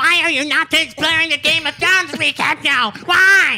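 put-on nerdy voice, very high. A host reads a listener's question aloud; nerd voice. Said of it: "Can I just say it like the nerd?".

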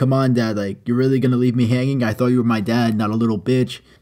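ordinary delivery

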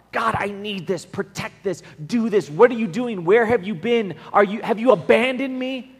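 furious screaming, angry yelling. Acting out people in the Psalms yelling at God, imitating angry yelling. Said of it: "screaming and yelling at God".

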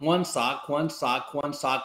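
ordinary talk, nothing marked

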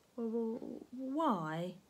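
nervous, anxious voice. The boy answers Miss Swine's refusal with a nervous question. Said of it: "The boy asked nervously".

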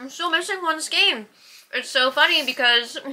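talking with food in mouth. Explaining a missing yarn order to another speaker, talking with food in mouth. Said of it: "I'm talking with food in my mouth".

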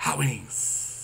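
secretive, very hushed whisper. Retelling how Macho kept saying it at the dinner: imitating Macho whispering. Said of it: "whispering it, like it's, like, a, a secret code".

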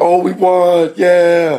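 put-on very slow, drawn-out little-kid voice. Retelling what every class said after organized recess, imitating a kid's voice. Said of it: "You're doing like a kid's voice".

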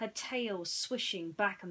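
ordinary delivery, nothing marked

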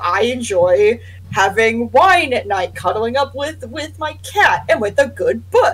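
put-on snooty, lofty tone of superiority. Retelling what a person said about themselves, mocking a high-and-mighty tone. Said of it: "this high and mighty".

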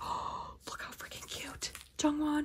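soft, hushed, awed, gushing whisper.

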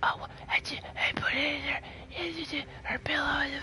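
secretive, hushed, very slow whisper. Retelling what someone said while trying to whisper: imitating someone whispering. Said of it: "trying to whisper and shit".

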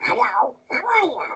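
cartoonish voice, way up high and slow. Recalling the first impression a parent taught: Donald Duck voice. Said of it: "my first impression was like".

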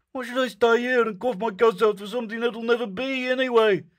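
risen, tight, strained, very high voice. After a fit of coughing, he asks why he should stay: risen, tight voice. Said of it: "his voice had risen and grown tight as a violin string".

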